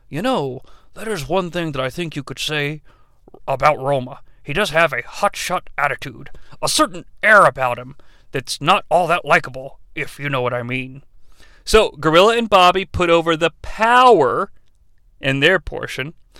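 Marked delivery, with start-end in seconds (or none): 0.1-11.0 soft, eased-down, thoughtful dad voice. Recapping the commentary, in Vince's thoughtful dad voice. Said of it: "with a thoughtful dad voice".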